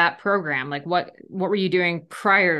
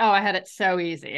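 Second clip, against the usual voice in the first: ordinary talk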